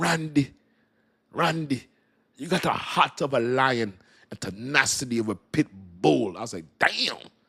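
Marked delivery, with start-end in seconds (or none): 0.0-6.4 put-on unhurried, drawn-out Jamaican accent. Retelling what Gramps said to the speaker, imitating Gramps's Jamaican accent. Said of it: "he said it's so cool with a Jamaican accent".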